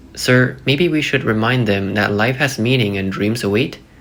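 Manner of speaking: normal talking voice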